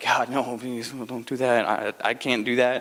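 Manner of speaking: play-acted, slow, terrified pleading. Acting out pleading with God to take the job away: imitating being scared to death. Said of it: "I'd be scared to death and be like".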